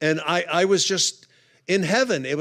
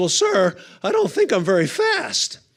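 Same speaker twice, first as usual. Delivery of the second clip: put-on little squeaky teenage voice, swooping pitch; 3 semitones higher than usual. Retelling his reply to a teacher as a boy, in a squeaky adolescent voice. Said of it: "my little adolescent squeaky voice".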